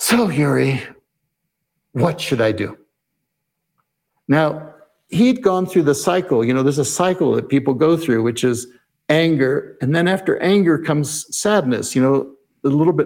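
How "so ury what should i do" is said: put-on slightly weary, deflated, worn-down tone. Retelling what a man asked after his shoulders sank, imitating a slightly weary tone. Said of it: "in a slightly weary tone of voice".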